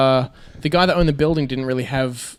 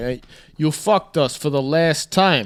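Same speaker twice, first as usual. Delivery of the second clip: Italian-American Brooklyn accent. Wishing he were Italian so he could say that line, Brooklyn Italian accent. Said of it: "you're talking like a Brooklyn Italian".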